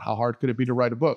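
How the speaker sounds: ordinary talk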